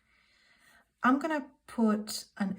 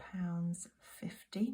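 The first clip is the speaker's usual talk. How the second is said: soft, slow whisper. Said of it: "Apologies if I'm whispering a little bit".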